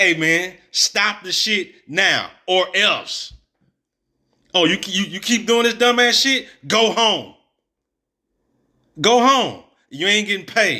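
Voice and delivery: acted firm, strong voice. Showing how to handle a fool who keeps misbehaving, firm. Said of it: "You got to be firm".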